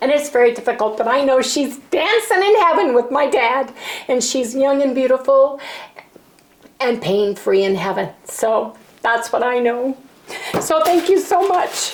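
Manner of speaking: tearful voice, crying through the words. Thanking a viewer for her kindness, crying while talking. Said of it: "I'm a blithering, crying, crazy person".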